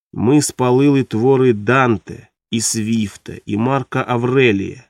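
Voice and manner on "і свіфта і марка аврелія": plain reading voice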